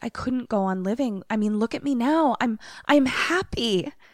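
mock manic, over-bright, high happy voice. Retelling what a woman said when she interjected, imitating manic happiness. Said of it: "but it's that manic happy".

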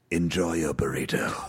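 very low talking-car voice. Answering a request to say the sign-off as Kit: KITT voice. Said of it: "Would you say it as Kit?".

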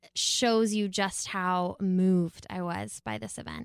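slow, halting, moved, at a loss for words.

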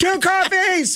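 very high, hollered, yelled call. Recalling rolling up and yelling an order at confused staff: retelling a yelled order. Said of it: "So I'm just yelling out my order".

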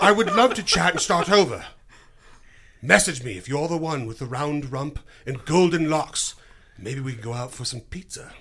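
fake put-on English accent. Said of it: "so I'm not always an Englishman".

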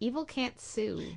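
quiet, totally deadpan, dead serious delivery. Recounting a scene, retelling what he said, totally deadpan. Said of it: "completely, totally deadpan".

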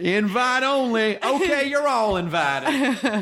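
high, slow Southern drawl.

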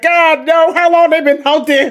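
shrill, very high-pitched, loud screaming. Recalling reacting to what was on screen: retelling own screaming. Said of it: "I'm screaming at the screen like".

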